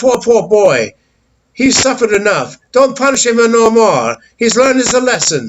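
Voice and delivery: put-on thick, high, weird Italian accent in woman's voice. Retelling Missus Dragonetti asking the dad not to punish: Italian accent. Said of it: "she had that weird Italian accent".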